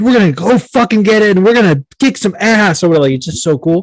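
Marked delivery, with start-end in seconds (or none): 0.0-2.8 mock pumped-up, fired-up hype, pitched up. Retelling what the company CEO says: imitating a fired-up boss. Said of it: "always, like, fired up".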